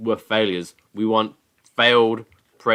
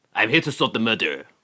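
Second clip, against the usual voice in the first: put-on French accent, detective style. Joking that a candidate's name sounds French: put-on French investigator voice. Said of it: "He sounds like a, a French investigate".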